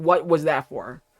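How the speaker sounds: acted angry outburst. Retelling own reaction after finishing a film: imitating own angry reaction. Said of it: "I was literally steaming angry after I finished watching it".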